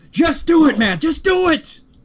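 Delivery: yelling high and forceful. Urging the other speaker to start the plug: Shia LaBeouf impression. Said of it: "I'm Shia LaBeouf here".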